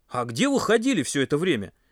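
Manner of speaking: openly annoyed, displeased tone. Lying on a blanket, Pasha asks the others a displeased question. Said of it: "недовольно спросил он".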